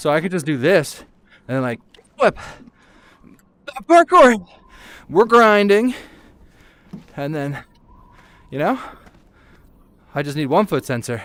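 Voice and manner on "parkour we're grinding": loud, high-pitched yelling. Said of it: "sorry for yelling kickflip really loud".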